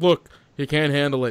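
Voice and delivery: ordinary talk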